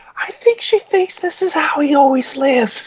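very high, tiny, light voice. Going back and forth with someone about your mom, do a little light Jim Gaffigan voice. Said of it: "little light voice".

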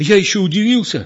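confused, at a loss. Egor explains to the old man after scalding Petro with hot water: bewildered. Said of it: "растерянно говорил Егор".

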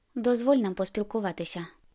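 ordinary delivery

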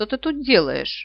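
put-out, irritated, displeased tone. An unknown dragon finds the narrator hidden under another dragon's wings: displeased voice. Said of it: "его недовольный голос".

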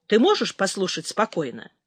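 ordinary delivery, nothing marked

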